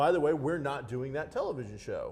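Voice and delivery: ordinary talk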